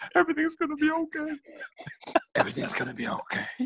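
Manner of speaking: very high, soft, thin, creepy and eerie puppet voice. Retelling how he took them aside and reassured them: Sean Dyche impression. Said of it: "the same as the saw impression".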